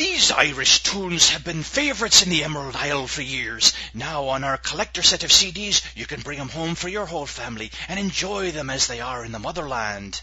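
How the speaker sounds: pirate voice. On a St. Patty's Day podcast episode, speak in a pirate-sounding voice. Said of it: "You kind of sound like a pirate".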